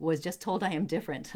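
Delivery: ordinary talk, nothing marked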